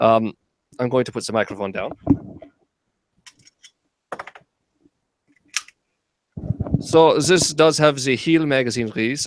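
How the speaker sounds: rusty, fake, put-on German accent. Showing a gun after saying he'll try an accent, put-on German accent. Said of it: "let me try this accent".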